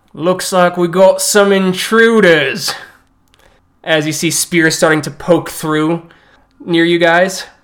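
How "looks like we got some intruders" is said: voice of a towering orc monster. Voicing orc guards who trap the party at a dead end: orc voice. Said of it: "towering orc-like creatures in armor".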